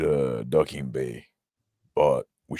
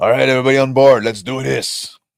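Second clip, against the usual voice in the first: very loud, very high rallying yell; 11 semitones higher, 12 dB louder than usual. Voicing a character who rallies the troops onto the shuttle: yelling in character. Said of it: "I yell".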